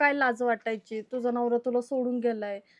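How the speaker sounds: usual speaking voice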